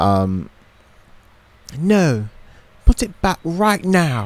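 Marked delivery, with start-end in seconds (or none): 1.8-4.3 put-on British accent, high, slow, drawn out. Showing off accents for listeners to rate, Australian then British: British accent. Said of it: "rate the British".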